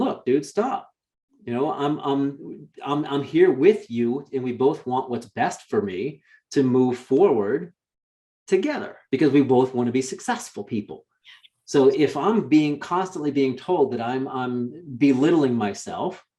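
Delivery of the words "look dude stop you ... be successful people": usual speaking voice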